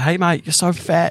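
drawn-out, slow, high, mocking, teasing jeer. Retelling a cricket sledge by an English player: imitating a player taunting. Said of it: "just ripping into him".

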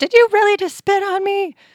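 very high, very loud, shrill freaked-out cry. Retelling a story, voicing the woman who was spat on: retelling a freaked-out reaction. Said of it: "of course she freaked out".

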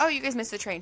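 play-acted, totally casual, breezy, matter-of-fact tone. Retelling what she said when they arrived for the train: retelling a casual remark. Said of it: "She said it so just like regular".

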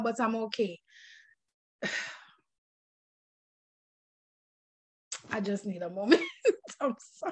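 emotional, laughing through it. Telling a story of waiting for a father, pausing: emotional, laughing through it. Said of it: "it's emotional".

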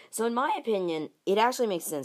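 voice cracking mid-sentence, breaking high. Speaker giving an opinion on a team's quarterback deal, voice cracking. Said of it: "Sorry for that voice crack there".

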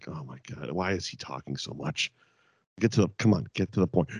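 put-on impatient wrestler voice. Voicing a wrestler's impatient thoughts: R-Truth impatient reaction. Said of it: "R-Truth is sitting there just being like".

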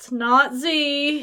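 high whimpering with the Z drawn out. Storyteller voices Layla as she mutely shakes her head, whimpering. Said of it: "and then just kind of whimpers".

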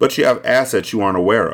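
plain reading voice

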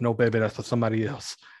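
wrestling promo style delivery. Quoting a wrestler's Dusty Rhodes impression from a promo: Dusty Rhodes impression. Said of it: "his Dusty impression, when he goes".

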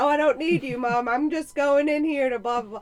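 put-on child hollering in a loud, high yell. A mother retells what he said coming back down the hallway, retelling a yell. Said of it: "he's yelling".

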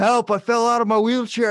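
high, loud, all-out scream. Telling how the man in the wheelchair made a distraction: imitating someone screaming for help. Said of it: "he starts screaming".

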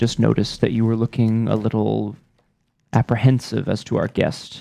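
quiet low voice. Speaking discreetly to a fellow character, keeping voice low. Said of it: "I'm gonna like try to be discreet and keep my voice low".

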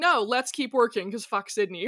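plain

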